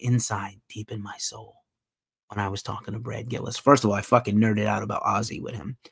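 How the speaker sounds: soft, low, hushed ASMR voice. Speaker recounts an interview for the channel, switching to an ASMR voice. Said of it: "let me get my A S M R voice on".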